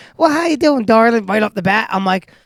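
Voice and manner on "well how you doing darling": put-on Southern accent, lady's voice. Imitating a company phone agent greeting a caller: imitating a southern lady. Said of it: "that Southern lady just like".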